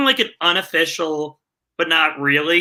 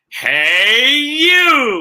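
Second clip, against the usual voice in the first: loud, swooping pitchman call, you stretched long; 7 semitones higher, 5 dB louder than usual. Author showing off his narrator voice while pointing to his books, pitchman voice. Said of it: "my pitchman's".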